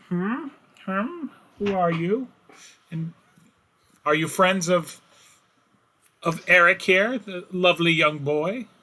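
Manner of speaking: put-on high, wrinkled old woman character voice. A narrator voices a woman character who comes out to the group, character voice. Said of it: "she kind of comes out and she's like".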